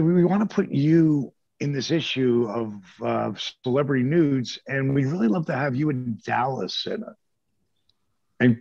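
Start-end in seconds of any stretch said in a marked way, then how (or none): none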